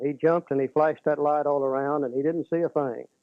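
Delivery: plain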